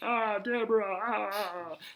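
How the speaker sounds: badly done, very high put-on voice. Mentioning watching Everyone Loves Raymond: terrible Ray Romano impression. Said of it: "Terrible Ray Romano".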